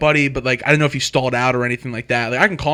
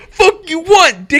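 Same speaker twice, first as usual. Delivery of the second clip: shrill, loud, high-pitched screaming; 14 semitones higher, 6 dB louder than usual. Telling a story about a man grabbing a knife, retelling a scream. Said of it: "And he's screaming at me".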